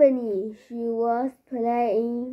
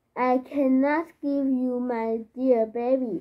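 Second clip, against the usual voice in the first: usual speaking voice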